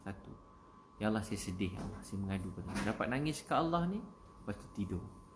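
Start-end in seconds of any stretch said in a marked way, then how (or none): none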